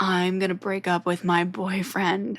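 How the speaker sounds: slow, eerie, unsettling, creepy voice. Recounting what a girl said in a Comedy Store bathroom, imitating a creepy voice. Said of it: "she said it in like the creepiest voice".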